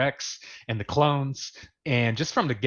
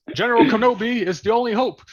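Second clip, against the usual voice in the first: put-on old-time newsreel announcer voice, higher and louder; 11 semitones higher, 8 dB louder than usual. Imitating the Clone Wars opening narrator: WWII radio announcer voice. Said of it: "he sounds like a World War Two, uh, uh, announcer".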